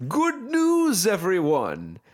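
pitch way up, announcer style. Talking to video game studios, doing a Professor Farnsworth voice. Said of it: "in my best Professor Farnsworth".

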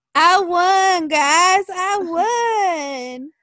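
very slow put-on southern accent. Imitating a woman announcing she won, in a fake southern accent. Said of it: "She's going to have that fake-ass southern accent".

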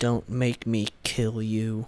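very quiet, low, dropped movie-hero delivery. Trading scene lines with another speaker, delivering this one in an Anakin voice. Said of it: "I can do my Anakin voice".

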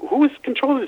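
high, loud, panicked and bewildered cry.

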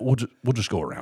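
calm, acted, matter-of-fact insistence, brief restart. Retelling doubling down after the attendant looks shocked: imitating own straight-faced delivery. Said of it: "really straight face".

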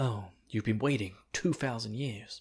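quiet put-on voice. Imitating Eren as he goes quieter: quieter Eren voice. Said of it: "He does kind of go a bit quieter".

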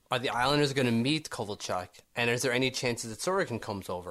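ordinary talk

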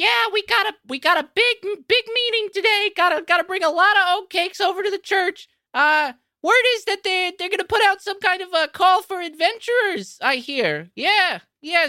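squeaky, very high, brash, loud little mouse voice. Working on orders in the back, a little mouse speaks up, loud-mouthed little mouse voice. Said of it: "a like loud mouth little mouse come out".

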